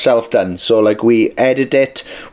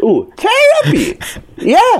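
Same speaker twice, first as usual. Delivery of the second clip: very high, sing-song, swooping, surprised exclamation. Joking about how people say the band's name, mock-surprised. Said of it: "Why do you sound so surprised?".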